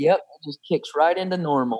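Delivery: low-pitched, sarcastic, ironic tone. Asked whether life returns to normal after being declared cancer-free, sarcastic. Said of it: "Sarcasm, can you tell?".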